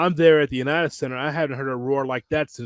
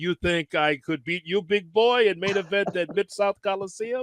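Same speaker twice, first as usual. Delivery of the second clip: put-on strong, swaggering French Canadian accent, pitched up; 5 semitones higher than usual. Retelling a story, the speaker quotes Jacques Rougeau in a Jacques Rougeau impression, strong accent. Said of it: "like strong accent".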